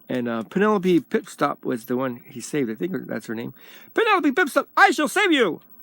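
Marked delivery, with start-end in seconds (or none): 3.9-5.6 high-pitched heroic cartoon voice. Describing an old cartoon, the speaker does the hero's line in a Dudley Do-Right voice. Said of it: "like that".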